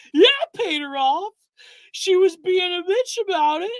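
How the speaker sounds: pitched way up and brash. Quoting what Destiny's leaks sound like: Ethan Ralph impression. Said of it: "you just enjoy doing an Ethan Ralph impression".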